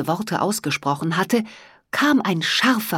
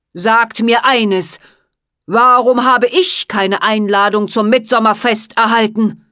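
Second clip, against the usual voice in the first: sharp, biting, cutting, slicing tone in raised voice; 3 semitones higher, 7 dB louder than usual. A mighty sorcerer demands an answer from the seven rainbow fairies, cutting voice. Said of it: "mit schneidender Stimme weitersprach".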